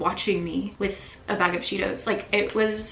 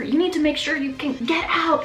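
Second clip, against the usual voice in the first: mock angry yelling, louder; 9 semitones higher, 6 dB louder than usual. Recounting how another person berated them over and over about a minor matter, retelling angry yelling. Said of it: "Just yelling at me like over and over".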